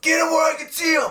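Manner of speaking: very high, loud, yelled delivery. Speaker retells a man yelling at them again in their car, retelling a yelled command. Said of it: "he yells at me again".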